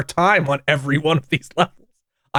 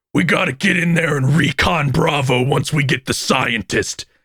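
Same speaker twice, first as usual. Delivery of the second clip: gravelly cartoon voice with a rasp. Describing a game's opening line from its hero: Serious Sam gravelly cartoon voice. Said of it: "his fucking gravelly cartoon ass voice".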